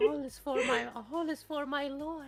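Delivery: put-on fawning, servile voice. Imitating a character who must suck up and call someone master: imitating May sucking up. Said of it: "has to suck up".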